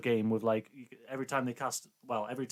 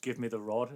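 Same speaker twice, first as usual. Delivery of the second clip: plain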